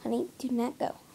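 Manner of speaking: soft, tender murmuring.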